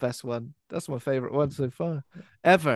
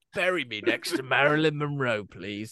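put-on horrible creepy cockney man's voice. Acting out a line by a man who shouts about his climax: put-on horrible creepy Cockney voice. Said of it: "a horrible, creepy, uh, Cockney guy".

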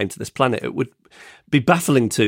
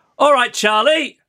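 very high, jeering, shouted call-out; 4 dB louder than usual. Retelling what one of a group shouted on approach: imitating someone shouting. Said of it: "one of them shouts".

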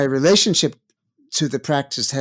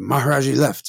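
rough, gruff voice. Retelling how a guard at the ashram turned them away, in a gruff voice. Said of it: "he had a gruff voice".

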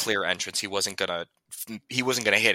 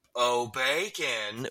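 calling out as if from a distance; 4 semitones higher, 4 dB quieter than usual. Voicing a character calling out for his mech: yelling loudly. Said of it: "just yells".

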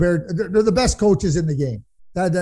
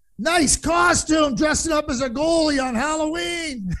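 shrill, very high, slow, drawn-out heckling yell; 10 semitones higher than usual. Retelling a man standing up in a quiet building: retelling a yell at the goalie. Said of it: "He yells at the goalie".

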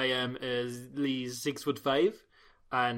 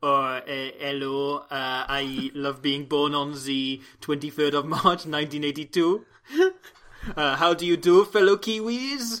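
put-on hesitant, uh-filled, loud, slow English with no accent; 5 dB louder than usual. Imitating a player doing Adam Thompson from Wikipedia: failed impression. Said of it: "can't do the accent at all".

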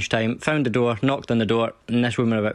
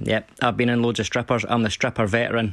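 ordinary talk, nothing marked

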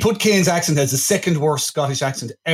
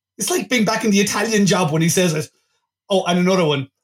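plain

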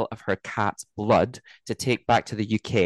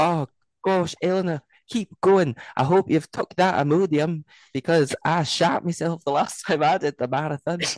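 put-on Scottish accent, pitched higher; 7 semitones higher than usual. Cheering on Eleanor as she runs a marathon, in a Scottish accent. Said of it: "definitely Scottish".

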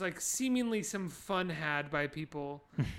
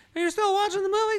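put-on shrill, very high, very loud kid's yell; 13 semitones higher, 9 dB louder than usual. Acting out an imagined post-credits scene: imitating the kid in it. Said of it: "a post-credits sting where the kid was like".

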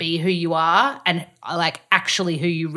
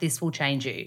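put-on deadpan delivery, lower and quieter; 4 semitones lower, 7 dB quieter than usual. Speaker retells to the listener their deadpan reply at the park: retelling a deadpan remark. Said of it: "you looked me deadpan in the face and you're like".

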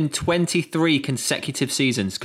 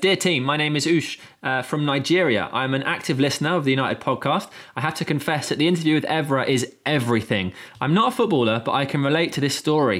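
ordinary talk, nothing marked

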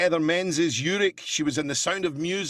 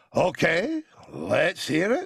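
very slow, drawn-out TV presenter voice, swooping pitch. Retelling what the show's host said on air: Andrew Neil impression. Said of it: "he's Andrew Neil. I did him on his show".

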